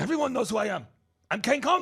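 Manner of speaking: intense, punchy delivery. Speaker retelling a man's reply to his wife, imitating Kang Kong's intense talk. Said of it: "he's not mad, he's just intense".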